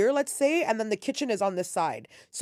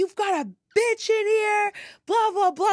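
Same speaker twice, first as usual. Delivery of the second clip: put-on scream, higher pitched; 11 semitones higher, 4 dB louder than usual. Retelling how an intruder burst in, imitating someone screaming. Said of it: "like, screaming".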